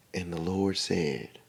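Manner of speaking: very soft, low, hushed preaching tone, soft-spoken. Describing a Jehovah's Witness sermon, imitating the preacher with very soft-spoken preaching. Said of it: "Very soft spoken".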